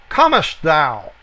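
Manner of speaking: ordinary talk, nothing marked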